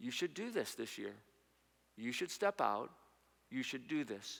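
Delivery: soft, hushed voice. Acting out a softer inner voice that urges yes: acting a softer inner voice. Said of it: "there's gonna be a softer voice that says".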